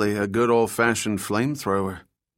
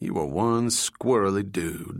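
plain reading voice

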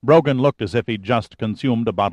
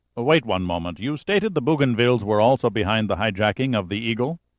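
plain

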